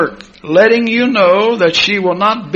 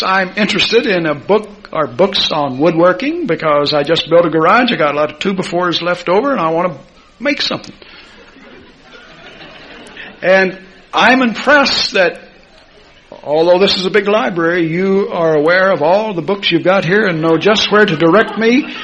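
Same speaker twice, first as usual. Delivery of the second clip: plain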